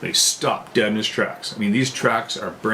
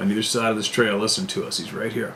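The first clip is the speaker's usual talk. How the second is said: normal talking voice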